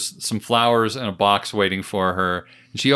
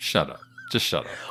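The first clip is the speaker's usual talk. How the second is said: much lower, softer deadpan. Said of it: "And Bond's just like".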